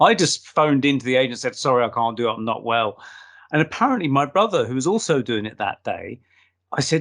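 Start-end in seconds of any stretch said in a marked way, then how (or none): none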